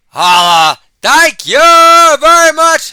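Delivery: very high, loud voice, cracking. Speaker cheering and thanking everyone, voice cracking. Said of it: "My voice is cracking".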